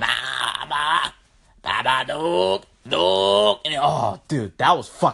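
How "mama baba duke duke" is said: eerie, creepy, very slow, creaky horror-film voice. Retelling a horror movie's phone call: imitating a creepy movie voice. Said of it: "That was actually scary as fuck, dude, this voice".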